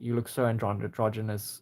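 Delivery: ordinary delivery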